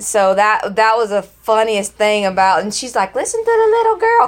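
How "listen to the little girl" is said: put-on girl's scream, higher pitch. Retelling a scene where the daughter screams at people: imitating a girl screaming. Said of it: "'cause she's just screaming".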